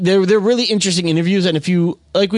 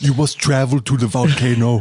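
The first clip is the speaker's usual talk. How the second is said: put-on German accent, lower pitch; 5 semitones lower than usual. Joking about a filmmaking class, doing a Werner Herzog impression.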